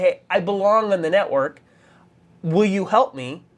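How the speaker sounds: ordinary delivery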